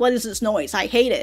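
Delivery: normal talking voice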